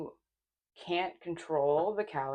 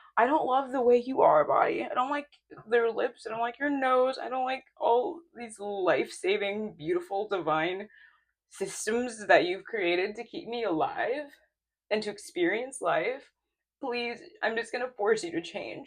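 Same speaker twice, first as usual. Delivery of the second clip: emotionally charged outpouring, raised and pitched up; 5 semitones higher, 6 dB louder than usual. Speaking to one's own body about body work: getting emotional. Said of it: "this is so emotional to me".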